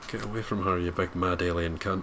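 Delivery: whisper under the breath. Recapping a reaction in the cinema: retelling own whisper under breath. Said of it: "I kind of whispered it under my breath".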